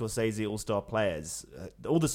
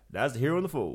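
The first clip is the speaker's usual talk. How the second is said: fake Southern US accent; 2 semitones higher than usual. Imitating Al Pacino's recent accent for another speaker: Al Pacino Southern accent impression. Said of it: "And now he's like".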